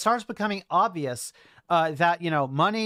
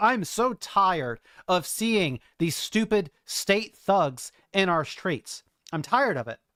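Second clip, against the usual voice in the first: fired up and fed up, angry worked-up outburst. Speaking after admitting being worked up: angry and worked up. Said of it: "I'm obviously angry about this".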